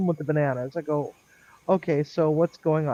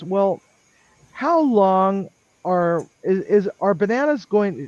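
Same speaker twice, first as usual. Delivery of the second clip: stuttering, halting, stumbling over repeated restarts; 3 semitones higher than usual. Retelling a question from the sergeant: imitating someone stuttering. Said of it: "she was, like, stuttering through it".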